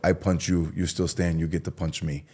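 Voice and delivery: bad put-on Russian accent. Retelling a punching challenge, speaker quotes Pablo in a horrible Russian accent. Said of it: "my Russian accent's horrible".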